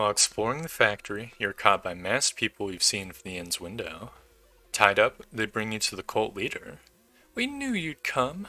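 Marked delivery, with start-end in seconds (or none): 7.3-8.5 very high, scraping, raspy voice. A masked priest speaks to the bound captive; raspy voice. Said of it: "You hear a raspy voice".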